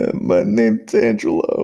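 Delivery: put-on sobbing, loud and bawling. Recounting the coach asking his name, retelling bawling while answering. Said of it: "And I'm just bawling".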